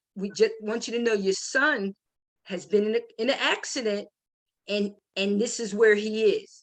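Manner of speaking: ordinary talk, nothing marked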